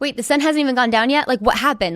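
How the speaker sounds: mock alarmed, bewildered full panic, fast, rattled off. Retelling waking up in a hotel room in full panic mode: imitating own past panic. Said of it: "I was in full panic mode".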